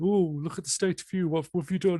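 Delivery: very high, put-on character voice. Showing how storytellers put on voices, voicing a neighbor: put-on neighbor voice. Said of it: "you're doing that voice automatically".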